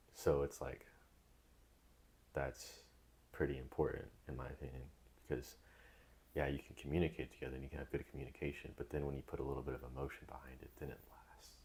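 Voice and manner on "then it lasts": very quiet, hushed whisper. Explaining why emotion makes communication last: whispering. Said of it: "Sorry, I just whispered that".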